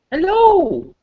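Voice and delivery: very high-pitched voice. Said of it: "I said it in that high pitched voice".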